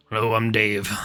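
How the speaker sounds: gruff voice of a rotund humanoid. Narrating a rotund humanoid man who looks at you, gruff Dave voice. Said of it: "like a gruff voice goes".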